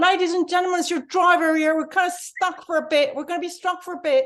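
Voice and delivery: put-on working-class London accent. Retelling a train driver's announcement while stuck in a tunnel, in a working-class accent. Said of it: "it's a working class accent".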